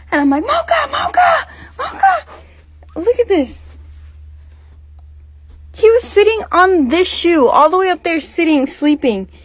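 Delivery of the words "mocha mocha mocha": put-on panicked, frantic, very high-pitched shouting. Retelling losing track of the dog and calling for it; retelling freaking out. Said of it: "I started freaking out".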